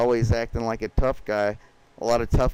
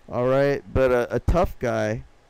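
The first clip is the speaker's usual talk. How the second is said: ordinary delivery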